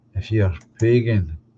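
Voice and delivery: normal talking voice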